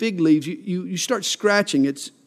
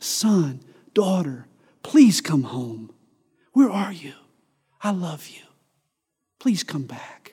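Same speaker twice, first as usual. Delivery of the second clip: broken-hearted, grieving pleading; 2 semitones lower, 4 dB quieter than usual. Showing how to read a bible verse, as a broken-hearted dad pleading. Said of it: "read it like a broken-hearted dad".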